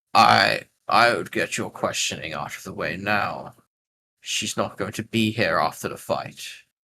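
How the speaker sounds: deep, rasping, raspy voice with an echo. Voicing the masked plague bearer warning a questioner: deep raspy echoing voice. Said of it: "a deep, raspy, uh, find it kind of, like, echoed voice".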